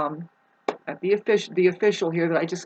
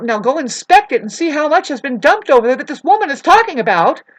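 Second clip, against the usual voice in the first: very loud, raised, swooping voice; 7 semitones higher, 9 dB louder than usual. Describing a phone dispute, the speaker demonstrates with a raised voice. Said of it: "me raising my voice like this".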